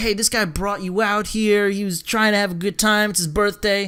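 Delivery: normal talking voice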